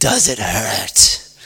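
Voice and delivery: very low, dark demonic voice. Retelling a voice on a 1 a.m. phone call: dark, demonic voice. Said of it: "it was a dark, demonic voice".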